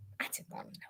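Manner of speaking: soft, unvoiced, breathed-out whisper.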